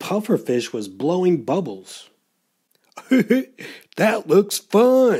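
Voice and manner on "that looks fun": high-pitched, spoken through laughter. Narrating a story, a shark watches a pufferfish blow bubbles: laughing. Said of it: "laughed Smiley Shark".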